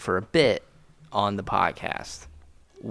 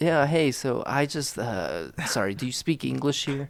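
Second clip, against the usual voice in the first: American tourist role in a plain voice; 4 semitones higher than usual. Playing a tourist asking about english in an imagined irish pub: playing an american tourist. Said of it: "I'll be the American tourist".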